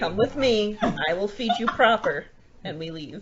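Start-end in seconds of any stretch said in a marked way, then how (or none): 0.0-2.2 firm, stern motherly tone, pitched up. Voicing a character addressing another player's familiar, in a mom voice. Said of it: "She mom voiced my my familiar".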